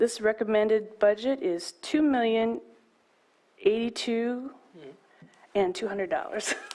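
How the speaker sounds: words broken up by laughter. Reading out a recommended budget figure, laughing while speaking. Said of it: "I'm sorry for laughing".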